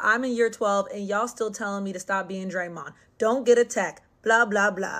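normal talking voice

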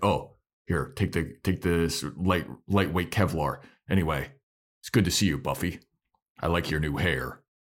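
put-on stiff military-type voice. Imitating Riley, who acts like a stiff military guy: imitating Riley's stiff military delivery. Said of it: "he's so stiff and it seems like he's trying to be, like, military guy, super stiff".

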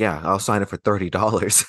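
put-on mumble under the breath. Retelling how someone answered about a signature: imitating a mumble under breath. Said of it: "he mumbled under his breath".

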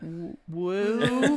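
timid, hesitant, drawn-out "woo". Retelling how early episode woos sounded: imitating own timid woo. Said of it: "my woos were like".

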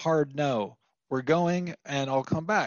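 ordinary talk

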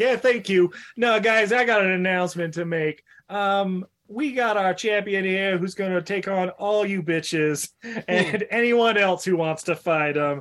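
New York mobster-style wiseguy announcer voice. Retelling a film scene where a mafia guy takes the microphone: imitating a New York Mafia guy. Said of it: "the New York Mafia guy, like, takes the microphone".

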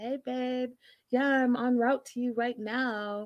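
put-on sultry, sexy little phone voice. Retelling a woman answering her man's call, imitating her little sexy voice. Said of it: "she has her little sexy voice on".

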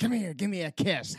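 put-on very high, shrill possessed-girl demon yell. Retelling a movie scene where a possessed girl calls her boyfriend: imitating a possessed girl yelling. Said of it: "she's yelling at what would have been her boyfriend".

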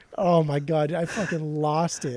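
normal talking voice

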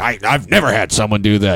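put-on fuming, furious man's voice. Retelling a manager's reaction after a window is rolled up on him: imitating a fuming man. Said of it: "the dude's just fuming".

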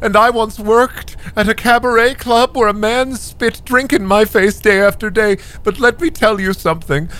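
put-on high-pitched scolding old lady voice. Game master voices an old woman addressing a young man, old lady voice. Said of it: "and you're just dry heaving in front of this old woman for what seems like an eternity, and she, this old lady cube".

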